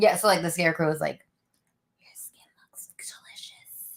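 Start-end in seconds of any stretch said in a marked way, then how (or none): 2.0-4.0 creepy, breathy, hushed whisper. Recounting what a scarecrow said to her, imitating a creepy whisper. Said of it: "he's whispering this like creepily".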